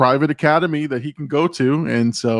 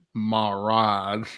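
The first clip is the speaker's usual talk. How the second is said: slow, soft, drawn-out southern drawl; 3 semitones lower, 7 dB quieter than usual. Quoting a character while discussing a scene: southern drawl. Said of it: "Keep that southern drawl when you say it".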